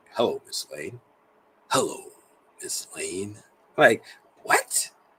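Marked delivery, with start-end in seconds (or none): 0.2-3.4 soft, velvety, smooth-as-silk voice. Marveling at his code switch, quoting his line: velvety Superman voice. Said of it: "Where'd you get that velvet in your voice from".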